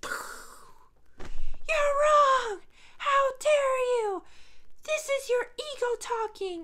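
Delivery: acted-out indignant shriek, very high, very loud, over-the-top. Speaker acts out how critics react, in an over-the-top mock-angry imitation. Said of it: "How about you tone it down?".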